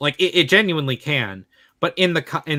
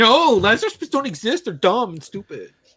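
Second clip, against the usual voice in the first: mock high-pitched screaming outburst; 7 semitones higher than usual. Imagining a director's reaction to magic, imitating Christopher Nolan screaming. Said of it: "I can hear Christopher Nolan, like, screaming".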